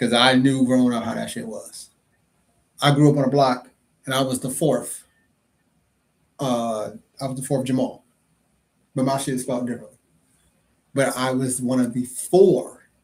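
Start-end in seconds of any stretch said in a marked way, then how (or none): 10.9-12.7 "four" stressed, said slow and loud. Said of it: "Emphasis on the word four".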